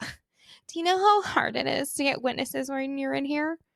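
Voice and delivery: high, petulant, whiny voice. Retelling a hearing before a judge, the speaker imitates James whining. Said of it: "then James starts whining".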